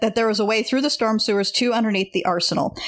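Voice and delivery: ordinary talk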